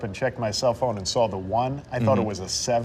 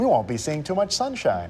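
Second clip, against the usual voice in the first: happy, upbeat, cheerful sing-song delivery; 4 semitones higher than usual. Showing that it's all in the delivery, said happily. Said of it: "if you say it happily".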